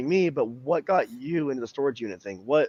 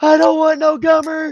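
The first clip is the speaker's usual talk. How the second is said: mock screaming in a higher pitch and louder voice; 13 semitones higher, 9 dB louder than usual. Retelling screaming in sleep about a toothless woman: imitating screaming in sleep. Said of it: "sleeping and screaming in my sleep".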